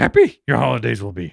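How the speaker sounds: deep, gravelly character voice. Answering a request to say something in a Yoda voice: Yoda voice. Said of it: "What am I supposed to be saying in a Yoda voice?".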